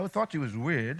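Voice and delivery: low, soft, joking, teasing aside.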